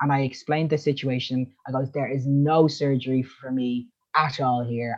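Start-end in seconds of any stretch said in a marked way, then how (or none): 1.9-5.0 acted forceful, upset, aggressive outburst, slow. Retelling explaining the situation to a nurse: imitating own aggressive tone. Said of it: "I got really aggressive".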